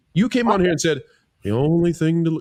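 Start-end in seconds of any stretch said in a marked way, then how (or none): 1.5-2.5 mock-gloomy tone, slower pace. Host mimicking how a guest delivered their answer, in a mock-gloomy imitation. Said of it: "You sound like Eeyore".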